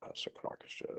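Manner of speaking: whispered, under-the-breath muttering to oneself. A defendant in court reacting to the charges, mumbling under the breath. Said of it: "Whatever you're mumbling is distracting".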